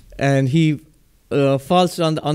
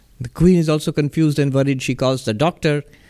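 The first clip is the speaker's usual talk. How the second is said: ordinary talk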